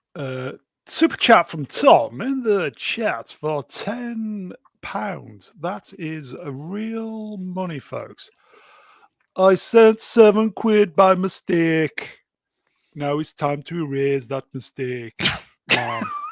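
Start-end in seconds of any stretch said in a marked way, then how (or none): 9.4-16.2 bad put-on Jamaican accent, laid on thick. Reading out a chat member's Super Chat message in an awful put-on Jamaican accent. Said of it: "get that Jamaican accent ready".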